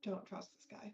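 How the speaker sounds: muttered barely under the breath, super quiet. A player's character catching up with the others after waving; super quietly under breath. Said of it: "say super quietly under my breath".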